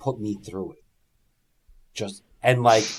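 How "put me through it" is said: quiet half-whispered voice. Retelling what Shane half-whispered to Kurt mid-match: imitating Shane McMahon half-whispering. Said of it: "Shane whispers to him".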